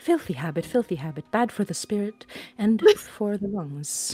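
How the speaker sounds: quick mutter under breath. Voicing a character reacting to pipe smoke: muttering quickly under her breath. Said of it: "very quickly under her breath is like".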